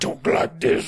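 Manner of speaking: whispered creepy villain voice.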